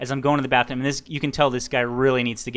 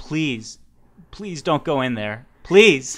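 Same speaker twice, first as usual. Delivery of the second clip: slow, near-tearful, begging plea; 3 dB louder than usual. Retelling begging a man not to use a toilet: retelling a tearful plea. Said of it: "I almost had tears in my eyes pleading to him".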